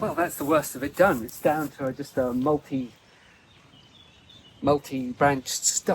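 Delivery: breathless, winded, out-of-breath talk. Having cut the work down to a stump, the speaker reports: out of breath. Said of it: "I'm actually out of breath".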